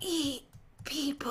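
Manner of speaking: low, hushed, very quiet whisper. Asked to whisper into the other player's ear as a shoulder devil: whispering. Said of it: "jump and whisper into my ear".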